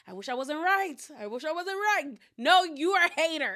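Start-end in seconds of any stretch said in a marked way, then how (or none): 0.1-2.1 mock glee showing under a regretful tone. Retelling what Adriana said, mocking her: imitating Adriana's gleeful tone. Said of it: "You had a sense of glee under, like, in that tone".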